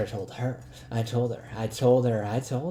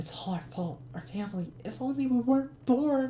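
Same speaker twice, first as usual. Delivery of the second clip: put-on very high, girlish female character voice; 12 semitones higher than usual. Voicing an unknown female character he guesses is Liliana, in Liliana's voice. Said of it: "I'm gonna use uh, her voice".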